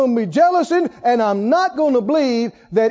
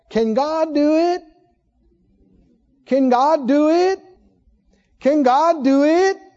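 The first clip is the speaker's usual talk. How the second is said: derisive, doubting, mocking sarcastic tone; 3 semitones higher than usual. Preaching, acting out the people questioning god: imitating a sarcastic question. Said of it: "sarcastically say".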